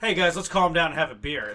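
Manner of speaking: very loud, threatening yell. Showing how the speaker's natural voice sounds telling guys to calm down: loud, like yelling. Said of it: "My natural speaking voice just sounds loud, like I'm yelling".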